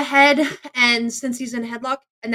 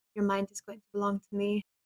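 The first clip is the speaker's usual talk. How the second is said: whisper in put-on voice, quieter; 3 semitones lower, 12 dB quieter than usual. Holding someone in a headlock and speaking into his ear: whispering in character. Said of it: "I'm gonna whisper in his ear".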